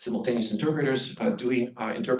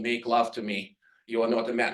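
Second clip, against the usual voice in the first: stiff, flat, lifeless, wooden delivery. Illustrating how some interpreters render an emotional line, in a very wooden voice. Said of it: "with a very wooden voice and saying".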